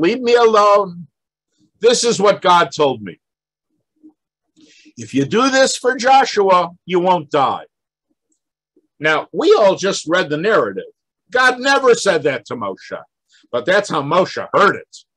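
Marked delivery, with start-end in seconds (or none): 0.0-7.7 put-on elderly voice with Yiddish accent. Retelling Moses answering those who question him, as an old Yiddish speaker. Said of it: "He sounds like a little old Yiddish speaker".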